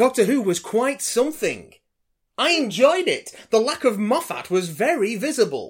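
showy announcer voice. A host reads out a letter addressed to him and his co-host, announcer voice. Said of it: "I'm doing this announcer voice".

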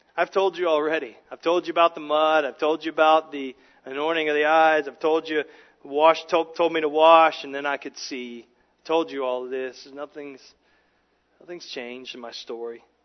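mock heavy, dripping sarcasm, audibly fed up. Retelling the beggar's fed-up answer to questioners: acting out a sarcastic reply. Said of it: "it just drips with sarcasm here".

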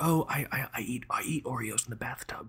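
hushed, quiet, confessional, confiding tone. Describing a podcast's guilty-pleasure admissions: hushed confessional voice. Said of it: "like a hushed".

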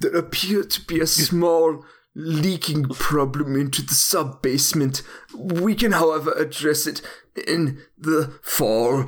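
put-on solid, convincing German accent. Doing a Werner Herzog impression in a gritty home-buying movie: Werner Herzog impression. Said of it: "if you got a good German accent".

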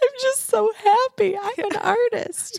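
very high-pitched, slow, tearful sobbing speech. Retelling what he told his wife on coming home: retelling sobbing speech. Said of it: "literally through sobbing".

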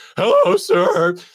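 put-on voice cracking like a kid's. Retelling a call to the cable company, as the kid answering: imitating a voice cracking. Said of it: "His voice is cracking".

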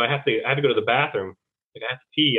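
ordinary delivery

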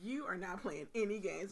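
ordinary talk

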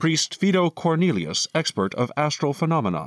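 high, computerized automated announcer readout. The narrator voices an automated system introducing an expert: automated voice. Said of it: "an automated voice".

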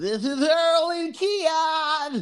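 very high-pitched, nasal put-on joke voice. Opening the podcast, the host introduces both hosts in a nasally put-on voice. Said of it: "What imitation is that?".

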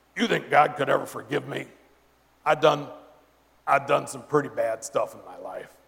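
rough, creaky, gravelly rasp, humble tone.

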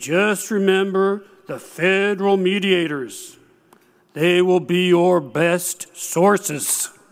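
put-on drawling North Carolina accent. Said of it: "Gene ended with a flourish".

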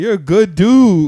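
put-on very high, very loud, drawn-out drunken yell. Retelling how Smarty was drunk yelling at him: imitating Smarty drunk yelling. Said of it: "Smarty was drunk yelling at me".

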